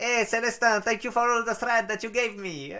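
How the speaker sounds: put-on Mexican accent, high and loud. Thanking Célestin in English while trying out accents, put-on Mexican accent. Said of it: "me chauffer à faire l'accent mexicain".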